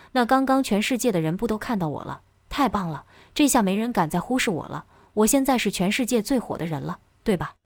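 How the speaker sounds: usual speaking voice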